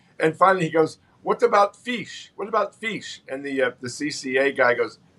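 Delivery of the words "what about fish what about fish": put-on Russian accent, pitched up. Retelling a visiting guest's question on a prison tour: deep russian accent. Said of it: "in that deep Russian accent".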